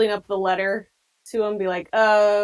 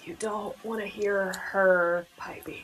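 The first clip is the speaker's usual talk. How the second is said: subtle, quiet murmur under the breath; 6 dB quieter than usual. Speaking in character while another character pours shots: muttering under breath. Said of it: "subtly under my breath".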